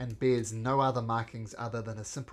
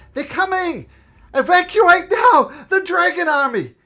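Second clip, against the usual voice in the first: shrill, high-pitched yell at full volume; 16 dB louder than usual. Voicing a mercenary riding in who yells a warning: mercenary yelling a warning. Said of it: "she yells".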